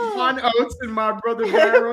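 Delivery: laughing through the words.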